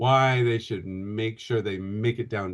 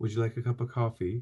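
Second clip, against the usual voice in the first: apologetic tone, Canadian-style delivery; 3 semitones lower, 8 dB quieter than usual. An actor demonstrates how Canadians ask a question, apologetic Canadian delivery. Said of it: "Americans speak with a more directness".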